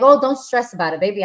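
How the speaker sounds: plain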